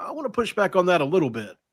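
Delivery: play-acted low-key, unforceful, easygoing tone. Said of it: "he said it like this".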